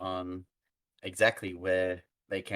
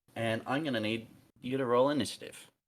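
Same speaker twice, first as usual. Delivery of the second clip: usual speaking voice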